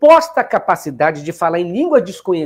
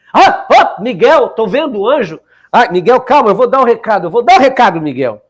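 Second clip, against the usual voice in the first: loud, ecstatic preacher-style proclaiming delivery; 2 semitones higher, 5 dB louder than usual. Remind your listeners of a pastor they may remember, with a Pastor Duque impression. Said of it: "Vocês lembram desse pastor Duque?".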